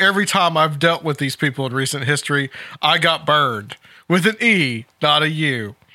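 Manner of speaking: usual speaking voice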